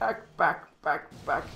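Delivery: play-by-play ballpark baseball announcer voice. Mid-game, the speaker calls out a move in a baseball announcer voice. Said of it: "Trying to sound like a baseball announcer".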